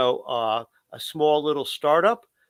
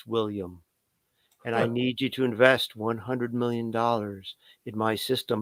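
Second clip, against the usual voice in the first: deliberate, very definite, low, slow monotone; 4 semitones lower, 4 dB quieter than usual. Showing how to make a listener pay attention: low, slow monotone. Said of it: "talking low and slow in very definite, kind of like a monotone".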